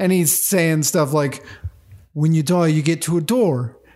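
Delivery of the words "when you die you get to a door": put-on botched accent that ends up sounding Irish. Retelling a priest's funeral speech from a movie: terrible Taika Waititi impression. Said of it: "I'm terrible Taika Waititi".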